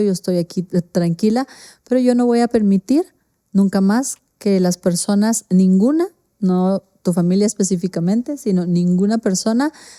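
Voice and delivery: ordinary delivery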